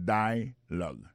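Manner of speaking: first-syllable stress on "dia" in "dialogue". Lesson on English word stress: stress on first syllable of dialogue. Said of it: "l'accent tonique là tombé sous premier syllabe là".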